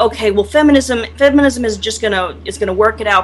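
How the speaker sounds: ordinary delivery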